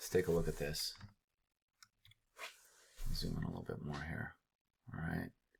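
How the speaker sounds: breathy, very soft, hushed, near-silent whisper. Zooming in on a chart, whispering like Bob Ross. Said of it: "I sound like the painter guy with the afro right now where he's whispering".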